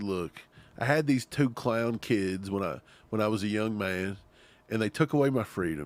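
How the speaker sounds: normal talking voice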